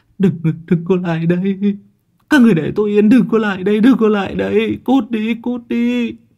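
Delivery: very high, trembling, stammering terror. A trembling Hiên responds to a friend's pat, trembling and stammering. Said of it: "giọng điệu lắp bắp".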